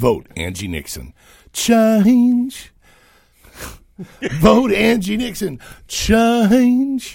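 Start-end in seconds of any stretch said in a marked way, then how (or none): 1.5-7.2 very high, showy, swooping ad-spot announcer delivery. Making up a campaign commercial spot, in a mock commercial announcer voice. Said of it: "I took my vocal lessons today".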